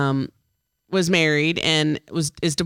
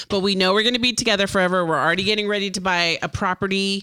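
ordinary talk

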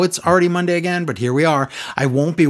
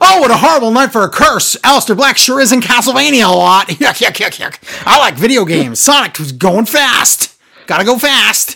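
put-on screaming commentator voice; 6 semitones higher, 6 dB louder than usual. Mocking a wrestling commentator who would scream out lines: imitating a commentator screaming. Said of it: "Dio would scream out things like".

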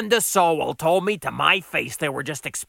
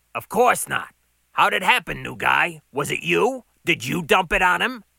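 ordinary delivery, nothing marked

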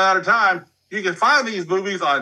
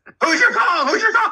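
put-on scream, higher pitch; 14 semitones higher, 3 dB louder than usual. Retelling a scene where another character kept screaming: imitating someone screaming. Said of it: "he kept screaming".

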